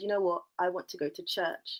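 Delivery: plain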